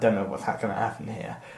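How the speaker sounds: put-on clenched-teeth delivery. Speaker recalls waiting as a woman came on stage, retelling speaking through gritted teeth. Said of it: "this is me through gritted teeth".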